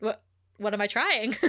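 put-on relaxed voice. Retelling a TV scene where Oz is thrown against a wall, imitating Oz's chill tone. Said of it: "he's so chill".

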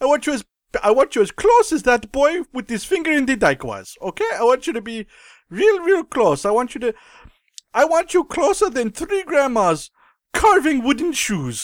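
put-on squealy, high-pitched German accent. Playing the director asking people to scooch closer: squealy German Paul Verhoeven voice. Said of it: "a squealy German guy is what he now sounds like".

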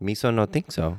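goofy, high, cartoonish childish accent. Trying out a disliked movie character's accent, childish accent. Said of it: "if you just talked in that accent".

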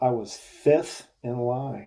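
slow, drawn-out, incredulous disbelief. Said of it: "he was just incredulous".

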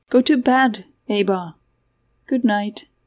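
plain

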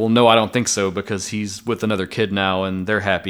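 ordinary talk, nothing marked

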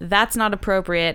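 normal talking voice

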